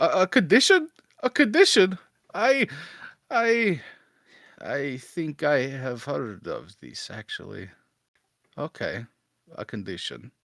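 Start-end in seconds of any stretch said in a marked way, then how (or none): 0.0-7.7 confused, much higher and slower. Game master voicing a character answering a player, confused.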